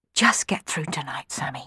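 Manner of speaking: hushed whisper. Narrating a boy's line at the cupboard after the woman leaves; whispered. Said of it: "he whispered".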